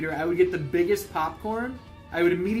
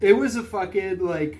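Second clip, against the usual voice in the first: speaking through a yawn; 3 dB louder than usual. Recapping a feud he barely remembers: yawning while talking. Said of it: "I don't know why I'm yawning".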